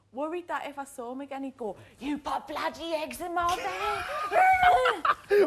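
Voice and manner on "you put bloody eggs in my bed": very slow, swooping put-on Cockney accent. Imagining what Jason would say on meeting again, imitating Jason in a Cockney accent. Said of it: "is Jason Cockney now?".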